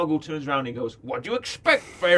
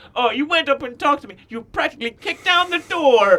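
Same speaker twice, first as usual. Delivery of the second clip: put-on very high, shrill, whiny teen voice; 10 semitones higher, 6 dB louder than usual. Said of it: "She's very whiny".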